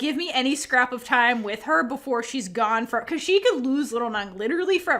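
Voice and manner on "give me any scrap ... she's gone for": ordinary talk, nothing marked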